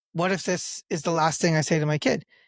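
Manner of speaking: ordinary talk, nothing marked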